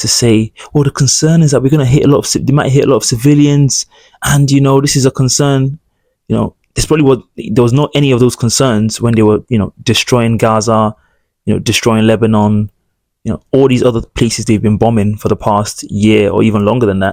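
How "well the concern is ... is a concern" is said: higher, quick, pleading, begging tone. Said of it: "He's almost already pleading and begging".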